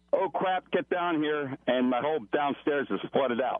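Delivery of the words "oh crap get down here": urgent, alarmed calling out. Retelling how the plumber called from downstairs: imitating a yell. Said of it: "He yells".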